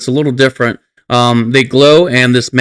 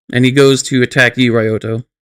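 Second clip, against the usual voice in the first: normal talking voice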